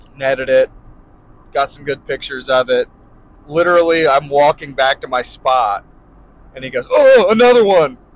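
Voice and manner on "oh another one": mock very high, loud, thrilled excited gasp. Retelling a fishing trip, imitating a friend's excited gasp. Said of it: "I like how you did your impression of me".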